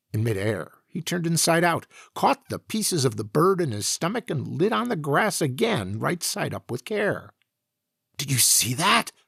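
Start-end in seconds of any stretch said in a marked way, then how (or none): 8.1-9.0 hushed, exclaiming voice. Narrator as himself, exclaiming to the Professor after watching the Jupiterian: hushed exclamation. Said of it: "I exclaimed in a hushed voice".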